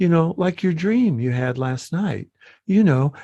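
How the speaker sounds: sugary-sweet, gentle, honeyed voice. Describing a demonic tv character talking to a woman, mock-sweet soft voice. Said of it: "he'll be like this very sweet, soft voice".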